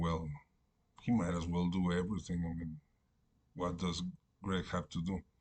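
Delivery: normal talking voice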